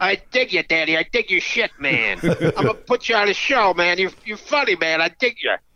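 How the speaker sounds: put-on old jazz-cat beatnik hipster talk. Recalling a phone call, the speaker mimics how the caller talked: imitating an old beatnik. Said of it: "he talked like an old beatnik".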